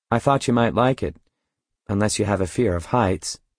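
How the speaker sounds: plain reading voice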